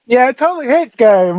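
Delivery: sarcastic, mocking tone. Reacting to a dice roll against the game master: sarcastic. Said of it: "I'm guessing you're being sarcastic".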